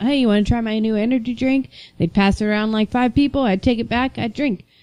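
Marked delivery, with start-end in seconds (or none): none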